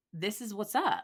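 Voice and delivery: ordinary talk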